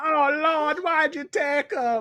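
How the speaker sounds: put-on Jamaican accent, very high-pitched. Retelling how the actress playing a grandmother testified at mock trial, affected Jamaican accent. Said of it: "affecting like a Jamaican accent".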